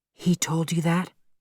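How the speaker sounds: timid, small, nervous, soft voice. A narrator reads her question to the narrator: small, nervous voice. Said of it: "She said in a small, nervous voice".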